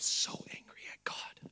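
slow, drawn-out, very quiet hushed whisper. Retelling a church member confiding to the pastor: imitating a whisper. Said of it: "they'll whisper".

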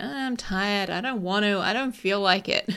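reluctant, whining, complaining grumble. Voicing the brain's reluctance about writing: imitating a whiny voice. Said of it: "It's kind of a whiny voice".

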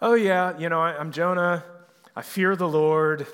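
put-on nonchalant, casual voice. Retelling Jonah's words to the sailors: nonchalant Jonah voice. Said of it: "he seems so nonchalant, like".

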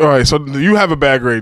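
ordinary talk, nothing marked

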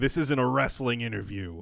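normal talking voice

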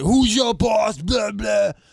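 mock yelling. Retelling a state trooper yelling at the speaker, imitating someone yelling. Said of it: "He's yelling and screaming at me".

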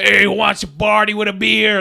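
rough, put-on slobby fat American guy voice. Retelling a movie scene, imitating a fat american. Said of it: "this fat American's like".

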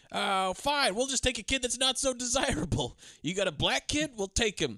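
mock, high, furious, flipped-out shouting. Retelling a man flipping out at the adoption agency: retelling him yelling. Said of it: "he's yelling at this point".

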